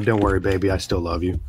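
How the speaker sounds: muttered under the breath. Speaking in character while tapping a control board: muttered under breath. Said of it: "under my breath".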